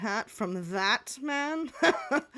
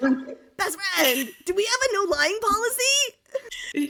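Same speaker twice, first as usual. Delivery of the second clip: put-on very high, loud turtle character voice; 10 semitones higher, 7 dB louder than usual. Voicing a turtle, the speaker addresses a best friend in turtle character voice. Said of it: "I can't go back to my Twitter voice".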